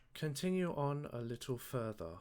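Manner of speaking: put-on booming British accent. Voicing the voice in a character's head urging her onward: British accent. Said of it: "Why did he turn British?".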